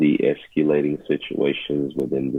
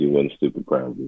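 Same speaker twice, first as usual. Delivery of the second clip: normal talking voice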